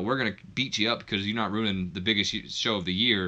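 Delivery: ordinary delivery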